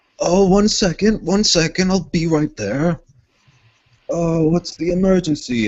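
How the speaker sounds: man calling out, high and loud.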